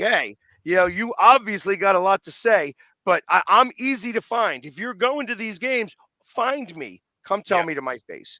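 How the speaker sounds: usual speaking voice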